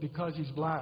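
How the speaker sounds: voice sunk very low, confiding tone. Retelling what a woman in town said: imitating a lowered voice. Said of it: "And she drops her voice a bit".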